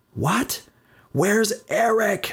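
shrill, high, loud yelling scream. First-person narrator repeating a question to Linda over the din, screaming over the din. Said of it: "I screamed over the din".

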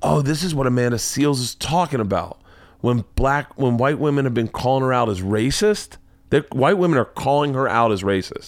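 ordinary talk

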